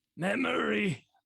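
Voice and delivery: very high, very loud rasping cry. Voicing Cedric, who keeps going and rasps out a word: rasping. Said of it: "though he rasps out".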